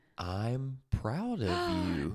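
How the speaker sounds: very slow, deliberate, drawn out word by word. Repeating it for the other speaker, who asked to hear it again, said real slow. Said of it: "I'm gonna say it real slow".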